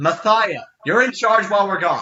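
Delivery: loud calling out. Voicing a character yelling back at the cave: yelling back to the cave. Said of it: "she yells back at the cave".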